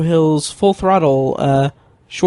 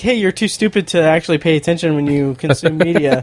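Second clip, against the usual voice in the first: ordinary talk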